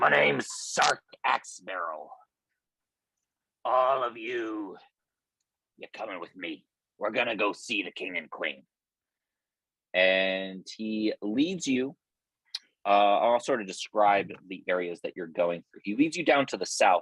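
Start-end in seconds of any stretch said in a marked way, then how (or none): 0.0-8.6 sly, jaded, cynical gnome character voice. Voicing a gnome who orders the group to the king: wily cynical deep gnome. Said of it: "wily, cynical, uh, deep gnome".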